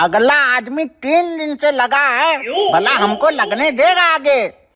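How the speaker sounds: put-on elderly man's way of talking. An old man in the gas cylinder queue answers someone telling him to go ahead, old man voice. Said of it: "उम्रदार आदमी है, / उम्रदार आदमी है, / अरे चाचा तुम तो बूढ़े हो".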